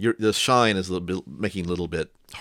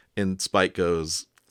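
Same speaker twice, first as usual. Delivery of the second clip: usual speaking voice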